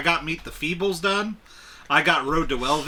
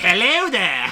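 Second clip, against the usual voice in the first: loud, put-on old witch voice; 4 semitones higher, 5 dB louder than usual. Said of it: "where the old witch lady was like".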